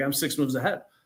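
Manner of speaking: self-assured, proud, boastful tone. Retelling a sales rep's answer about chess: imitating a prideful reply. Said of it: "And he was prideful".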